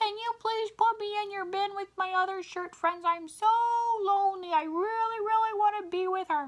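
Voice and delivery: squeaky, very high, silly put-on voice. Retelling how they voiced a shirt for a small child: funny talking-shirt voice. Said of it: "talking in funny voices or using inanimate objects".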